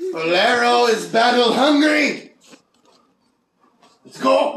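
rowdy, loud, high-pitched war cry. Declaring a character is eager to fight, yelling loudly. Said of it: "Do you have to yell so loud?".

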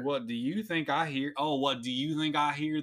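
put-on Southern accent with a drawl. Reading a question aloud for a joke: put-on Southern accent. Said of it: "why am I doing this accent?".

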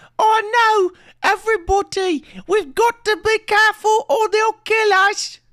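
very high, squeaky, loud little British mouse voice. Discussing a movie's standout character, speaker quotes it in a little British mouse voice. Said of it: "He says".

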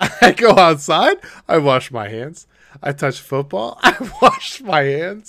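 put-on very loud, high little-kid voice. Retelling what a kid in a show says: imitating Tyler, a kid. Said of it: "He's like".

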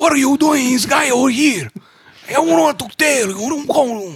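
high-pitched Mexican accent. After praising someone's accent, a speaker tries one himself, mexican accent. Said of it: "I can do this is because I lived in Mexico".

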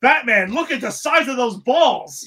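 put-on high, loud shout. Recapping a Batman story, imitating Robin yelling. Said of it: "Robin has to yell out".

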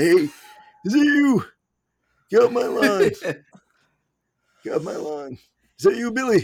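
put-on very high, loud, hollering old man voice. Friend imagining how he will sound when old: old man voice. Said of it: "how I'm going to sound when I get old".

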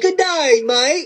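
put-on Australian accent with a twang. After admitting they can't do the accent, trying it anyway: attempted Australian accent. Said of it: "Australia has an English accent with a twang".

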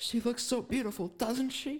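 high-pitched, tearful voice, on the verge of tears. Retelling a wedding scene, quoting a character: imitating Connie almost in tears. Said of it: "Connie's almost in tears".

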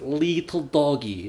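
put-on Russian accent. Acting out an inside joke, speaking in a pseudo-Russian Gru accent. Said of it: "Like a pseudo-Russian Gru".

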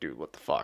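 mock spooked, freaked-out outburst, kept very quiet, hushed. Retelling how a priest reacted to the dead man praying: imitating a freaked-out priest. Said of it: "he freaked the fuck out".

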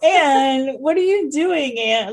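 mock disappointed, exasperated reproachful tone. Retelling how a husband catches his wife prying boards: imitating a disappointed tone. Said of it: "like he's disappointed in her".

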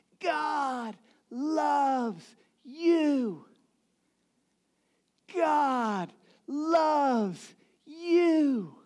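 very slow, high scream, "you" stretched long. Retelling a preacher drenched in the rain: imitating someone screaming.

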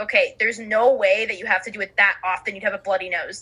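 ordinary delivery

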